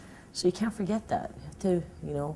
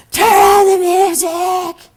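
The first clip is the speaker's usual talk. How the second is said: put-on drunken scream, higher and louder; 18 dB louder than usual. Retelling a reading where drunk drag queens heckled: imitating screaming. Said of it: "they were just screaming".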